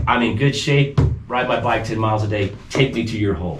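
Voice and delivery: ordinary talk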